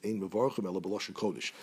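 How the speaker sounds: usual speaking voice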